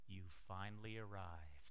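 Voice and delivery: very deep, soothing ad voiceover announcer voice. Recalling a car commercial from a few years ago, soothing Mercedes-Benz commercial voice. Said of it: "in that soothing voice".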